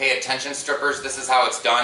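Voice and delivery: normal talking voice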